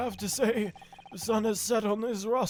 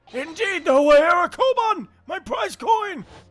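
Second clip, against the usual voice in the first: put-on elderly man voice, higher and louder; 8 semitones higher, 11 dB louder than usual. Voicing a character reading game lines: old man voice. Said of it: "your old man voice".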